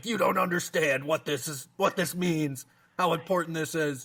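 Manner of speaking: mock irritated snapping back, high-pitched. Retelling how they answered their mom's question about their mood: retelling snapping at mom. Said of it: "I kind of snapped at her like".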